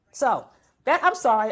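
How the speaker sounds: normal talking voice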